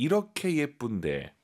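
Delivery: 이렇게 punched high and said slowly.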